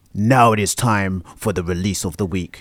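dramatic movie trailer narration voice. Speaking with Larry, the speaker launches into a movie voice. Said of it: "Did you like my movie voice".

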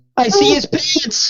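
crying, high, slow, weeping rapture.

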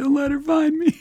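very high, play-acted fake sobbing. Imagining the other speaker hiding in a closet, pleading: mock crying. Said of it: "you're just sitting there crying".

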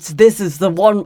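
clumsy, badly done put-on British accent. Showing the other speaker a British accent, admitted to be bad: put-on British accent. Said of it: "I could do a British one that's like this".

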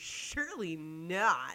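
dry, mocking sarcasm with not drawn out. Showing how people sound when they are being sarcastic, in a sarcastic tone. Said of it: "people are being sarcastic, they do like this".

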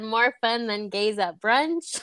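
normal talking voice

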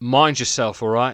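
put-on East London accent. Retelling what a man said while handing something back: East London accent. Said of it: "he had like an East London accent".

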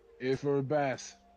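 burly, hard-man street-tough voice. Voicing a burly street tough greeting two visitors: street tough voice. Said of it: "a street tough".

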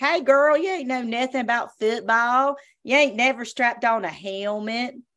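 clumsy, fake Southern US accent. Quoting a radio show caller, in a bad southern accent. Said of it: "bad Southern accent".

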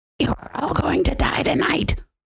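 breathy whispered demon voice. Recapping a film scene, speaker voices Mia in a demon voice. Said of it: "That's your best demon voice this whole time".

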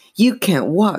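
quavering, shaken. Chris, holding the giggling dummy, cries out to it, voice trembling. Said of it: "her voice trembling".

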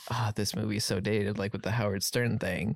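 ordinary delivery

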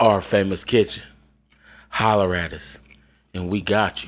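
very low, sultry, breathy voice, fast. Giving a shout-out for Our Famous Kitchen, breathy voice. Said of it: "Why you go so breathy with the holler at us like that?".

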